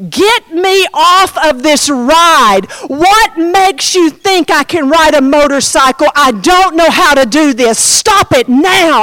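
frantic, all-out panicked screaming fit. Retelling freaking out on a motorcycle ride, reenacting own panicked screaming. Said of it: "start screaming".

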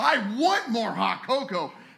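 excited screaming. Telling a story about Santa and an elf, imitating Santa's excited shout. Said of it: "so excited about".

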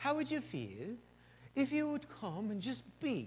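imitated British accent. Retelling what church leaders in england asked: british accent. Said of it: "with their British accent".

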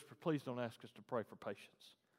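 soft, hushed, quiet pleading whisper. Retelling what the driver said in the car: imitating Casey's whisper. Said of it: "he just whispered".

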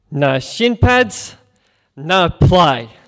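put-on heavy Italian accent, very loud and very slow. Retelling a man's four-word reply to them, in a thick Italian accent. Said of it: "in this very thick Italian accent".

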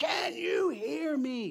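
mock very high, slow, frustrated yelling. Recounting a dream of shouting into a failing phone line: retelling screaming into phone. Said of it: "I'm screaming into the phone".

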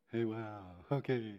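loud, loopy, dazed voice. Retelling a dentist visit on nitrous, acting loopy on nitrous. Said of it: "I don't giggle, I get loopy".

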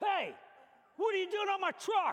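loud, high, mock angry shout. Retelling being caught cleaning a man's truck windshield, imitating Andy's angry shout. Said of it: "And I hear this voice, Andy's voice".

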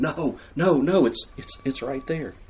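high, drawn-out, exasperated groaning. Acting out a reader groaning as the detective overlooks a clue: mock groaning. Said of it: "you're just groaning".

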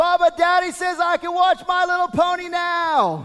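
yelled at the top of the voice, very high. Retelling how she walked down the stairs and called out, retelling a shout at full voice. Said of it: "she said at the top of her voice".

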